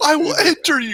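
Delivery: high angry yelling. Retelling a movie scene where a character yells at a man in a theater: imitating John Cena yelling. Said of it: "when he's yelling at the dude in the movie theater".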